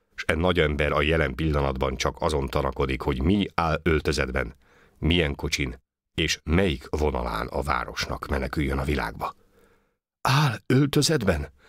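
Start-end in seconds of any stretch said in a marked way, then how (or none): 10.2-11.4 very high, halting, faltering stutter. The martial gentleman echoes the question back, faltering and stammering. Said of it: "rebegé a marciális úr".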